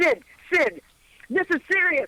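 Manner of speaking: yelled out in a very high, shrill voice. Retelling interrupting a man who kept talking about meters, retelling a yell.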